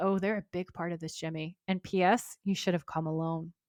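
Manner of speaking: ordinary delivery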